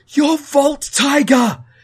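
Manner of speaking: play-acted, very high, loud, shocked exclamation. Retelling a friend's teenage character's outburst during a mission, imitating a shocked voice. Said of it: "in the most shocked voice go".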